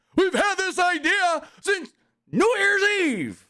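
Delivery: very high-pitched, crowd-projecting speaking voice. Quoting how he talks to the crowd: Tony Khan impression. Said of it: "I'll do it like Tony Khan".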